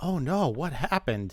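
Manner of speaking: put-on scared voice. Retelling a scam phone call, imitating own fake fear. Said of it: "So so I acted all scared".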